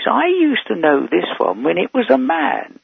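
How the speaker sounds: big, loud, swooping voice. Retelling what a Big Issue salesman outside the station said; retelling a loud remark. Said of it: "he said in a loud voice".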